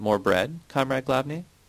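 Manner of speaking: ordinary delivery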